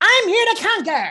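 very high, loud, crunchy shrieking alien voice. Voice actor describing their own Cupid skin voice, demonstrating an Invader Zim voice. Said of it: "mine was this very Invader Zim".

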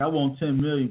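normal talking voice

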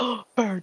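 excited, thrilled, freaking out a little with delight. Voicing Hikari, who likes animals, spotting a bird: Hikari excitedly seeing a bird. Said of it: "Hikari's probably freaking out a little bit because she likes animals".

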